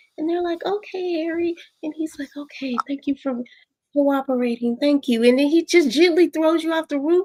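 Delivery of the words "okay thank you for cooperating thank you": put-on calm, even voice. Acting out Harry's words in a retold story, imitating his calm level voice. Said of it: "he never raises his voice".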